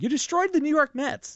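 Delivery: shrill, very high, loud shouting. Retelling own reaction to a Madoff interview: imitating a yell. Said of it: "I'm yelling".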